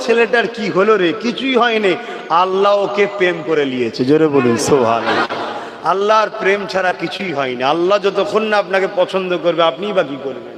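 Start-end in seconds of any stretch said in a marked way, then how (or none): none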